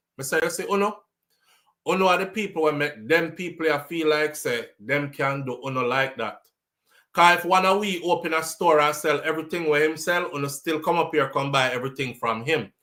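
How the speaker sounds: plain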